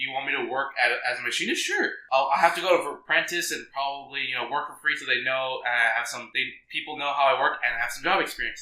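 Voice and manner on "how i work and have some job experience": ordinary talk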